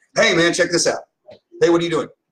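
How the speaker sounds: put-on upbeat enthusiasm. Giving advice on pitching yourself, demonstrating acting enthusiastic. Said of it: "Act like you're enthusiastic".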